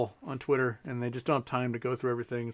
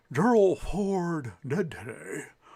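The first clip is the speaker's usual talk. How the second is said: put-on very slow newsman voice with a Nebraska accent; 4 semitones higher than usual. Showing how news guys' accents changed, in a Tom Brokaw-style Nebraska accent. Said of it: "they switched to the Nebraska accent".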